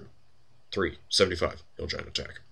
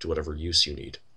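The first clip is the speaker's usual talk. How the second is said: ordinary talk, nothing marked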